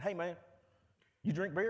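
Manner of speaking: loud, heavy Alabama drawl, laid on thick. Retelling what a classmate said to him after class, in a thick Alabama drawl. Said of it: "in this thick Alabama drawl".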